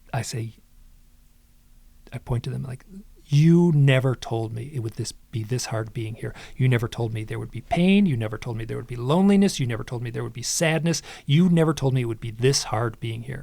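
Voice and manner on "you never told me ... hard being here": normal talking voice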